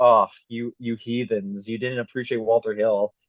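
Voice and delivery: ordinary talk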